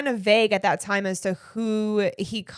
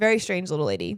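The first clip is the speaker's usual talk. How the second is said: normal talking voice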